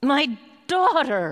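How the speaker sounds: loud, desperate, terrified cry full of dread. Speaker retelling a powerful man's cry for his daughter, acting out a terrified cry. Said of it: "Hear his love swallowed up in fear and dread".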